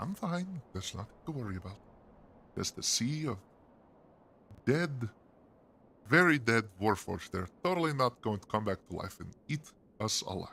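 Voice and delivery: nervous, shaking, trembling voice. Narrating Kiritha's reply as a player squeezes her hand: Kiritha's nervous trembling voice. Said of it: "tremble to Kiritha's voice".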